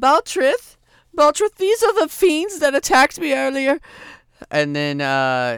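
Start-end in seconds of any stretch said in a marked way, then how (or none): 0.0-3.8 high, loud woman's voice crying out. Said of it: "you hear her say".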